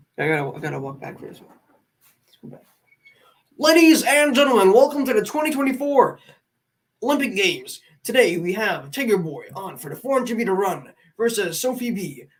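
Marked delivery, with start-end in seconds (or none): 3.6-12.2 put-on stadium sports announcer voice. Doing an impression of an announcer at a sporting event, put-on sports announcer voice. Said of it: "here is my impression of people at like any sporting event".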